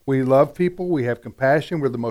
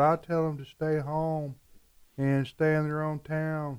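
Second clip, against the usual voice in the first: put-on sheepish tone, quieter and slower; 7 dB quieter than usual. Acting out a man's answer when he is asked what he'd say now, retelling a sheepish reply. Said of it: "he's like sheepishly said".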